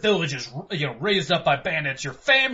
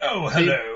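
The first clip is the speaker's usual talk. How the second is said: put-on sophisticated evil British villain voice, lower; 2 semitones lower than usual. Imitating how the villain sounded in the original game: imitating a sophisticated evil British man. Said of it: "he sounded like a really sophisticated, you know, like, evil British man".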